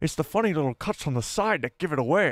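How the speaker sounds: put-on slight Scottish accent. Repeating a line from a film scene just watched: imitating Dexter Jettster's Scottish-like accent. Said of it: "almost like a Scottish accent in there".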